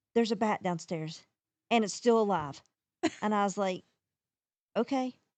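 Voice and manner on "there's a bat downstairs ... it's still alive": ordinary talk, nothing marked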